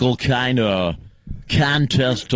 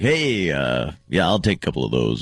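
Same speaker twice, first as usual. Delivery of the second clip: fake, hacky put-on radio announcer voice, swooping; 8 semitones lower than usual. Imitating a radio host ordering in a store: imitating hacky radio voice. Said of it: "using that voice all the time".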